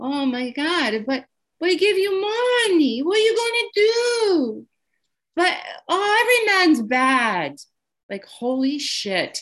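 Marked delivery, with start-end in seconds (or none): 0.0-7.6 put-on very high, heavy Portuguese accent, drawn-out "do". Speaker recalls telling their mom about getting divorced again, imitating mom's thick portuguese accent. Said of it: "in her Portuguese, very thick accent".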